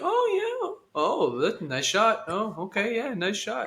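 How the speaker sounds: easygoing, unbothered, breezy sing-song chatter. Describing playing video games with Braden, imitating Braden staying calm. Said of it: "just so steady faced".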